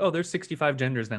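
ordinary talk

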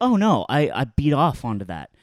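normal talking voice

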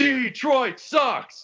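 mock full-volume scream. Retelling a father screaming during a basketball brawl: imitating a full-volume scream. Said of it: "just on his feet screaming at full volume".

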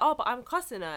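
ordinary delivery

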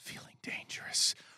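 very soft, breathy whisper, very close. Imagining a teammate whispering in your ear on a flight: imitating Russ whispering. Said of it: "Russ comes up behind your ear and whispers".

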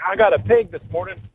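put-on excited voice. Caller retells his brother-in-law phoning one morning, imitating excitement. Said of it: "he was all excited".

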